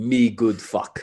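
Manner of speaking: put-on speaking English with a light Hungarian accent. Retelling what a woman following the speaker said, in a Hungarian accent. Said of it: "in her little Hungarian accent".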